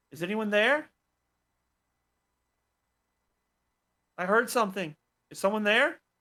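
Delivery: very high woman's calling voice. Voicing an unseen woman heard by the group: woman's voice calling out. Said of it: "you hear the woman's voice call out".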